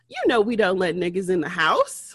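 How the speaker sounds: casual, matter-of-fact, fast, offhand, nonchalant. Retelling a man's reply to an offer of help, imitating a nonchalant remark. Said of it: "the man just nonchalantly said".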